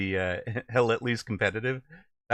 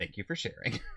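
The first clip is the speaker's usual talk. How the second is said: put-on condescending tone; 9 dB quieter than usual. Quoting what the speaker's parents said when a kid said something odd, mock-condescending. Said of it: "very condescendingly".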